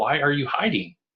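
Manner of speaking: mock exasperated, frustrated yell calling out. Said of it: "I just got to a point of frustration".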